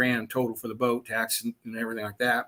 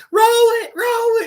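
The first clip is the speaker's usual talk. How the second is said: shrill, very high, loud screaming; 6 dB louder than usual. Retelling a car rollover, the speaker's girlfriend yells from the bar; imitating someone yelling. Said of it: "She's yelling".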